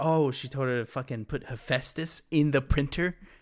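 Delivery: normal talking voice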